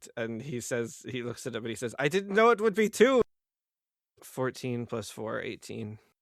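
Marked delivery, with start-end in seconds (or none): 2.0-3.2 very high, loud, shocked, stunned disbelief. Voicing a character just hit by a blow: shocked in character. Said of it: "he's looking very shocked".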